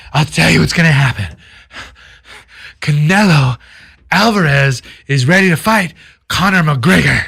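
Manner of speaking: mock, barely able to talk, struggling speech. Retelling a man filmed leaving a bar, imitating someone barely able to talk. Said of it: "he can barely talk".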